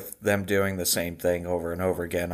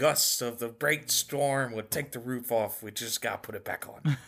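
clumsy, bad Scottish accent, pitched up; 5 semitones higher, 4 dB quieter than usual. Trying out an accent for the others, bad Scottish accent. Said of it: "I want more on that accent next week".

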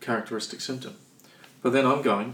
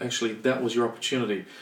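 usual speaking voice

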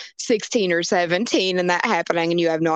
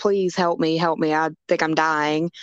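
imitated panicked, pleading voice. Retelling a girl's plea to other girls: imitating someone freaking out. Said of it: "she's just, like, freaking out".

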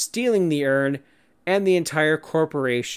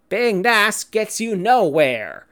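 terrible fake Texas accent, loud and high; 7 semitones higher, 5 dB louder than usual. Quoting a justification for a heel turn, in a bad Texas accent. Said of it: "Sorry for that terrible Texas accent".

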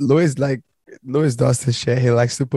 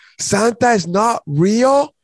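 play-acted screaming child, pitched very high; 10 semitones higher than usual. Retelling how a kid reacts to Alexa's answer: imitating a kid screaming. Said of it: "And then he starts screaming".

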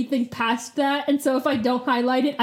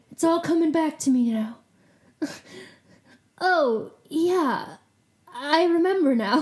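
mock dazed, spaced-out, stoned-sounding voice; 3 semitones higher than usual. Recapping Rachel's memory returning as she talks to Cassie: SNL skit mock-stoned voice. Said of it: "Why do you sound stoned?".

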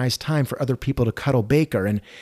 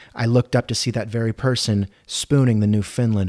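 ordinary talk

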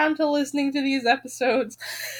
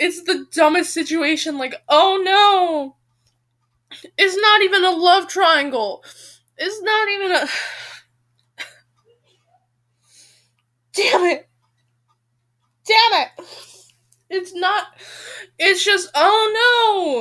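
very upset, sounding like sobbing; 3 semitones higher than usual. Speaker venting about a relationship drama, upset, sounding like sobbing. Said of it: "I know I sound like I'm sobbing".

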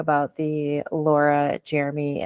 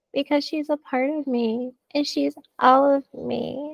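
put-on high slow cooing baby voice. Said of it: "And that baby voice".

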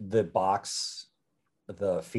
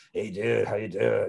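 put-on stoner dude voice. A voice actor demonstrates the voice he uses for Sid, a stoner character. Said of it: "the voice that I voice Sid in is like".

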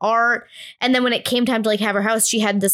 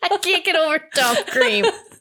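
high, talking through a laugh-cough; 7 semitones higher than usual. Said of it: "like a laugh cough at the same time".

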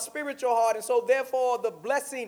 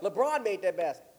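ordinary delivery

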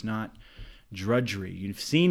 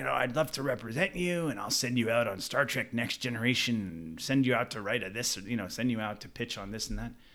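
put-on gruff voice, faster; 2 semitones higher, 3 dB quieter than usual. Retelling a scene he wrote where a boutique agent pitches him, gruff voice. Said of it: "this very gruff voice boutique agent say".

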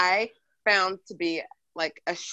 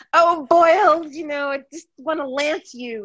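put-on moan, higher; 7 semitones higher, 4 dB louder than usual. Joking that a partner's name would ruin the mood: mock moaning a name. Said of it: "I will like moan the name".

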